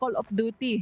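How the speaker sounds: speech with Filipino accent. Showing how the game's name sounds: Filipino accent. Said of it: "I gotta let my Filipino out too".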